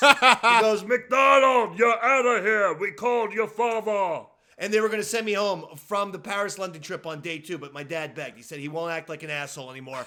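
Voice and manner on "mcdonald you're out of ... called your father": slow, lumbering, drawn-out giant voice. Retelling being grabbed by the throat and scolded by Brother Bundy: Andre the Giant voice. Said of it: "He had an Andre the Giant voice".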